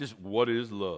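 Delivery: voice dropped as deep as it goes. Speaker leading the audience to say the question together, in deepest voice. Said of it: "in your deepest voice".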